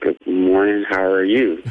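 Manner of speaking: low, slow, sleepy, half-awake voice. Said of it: "You don't have to talk that slow to us".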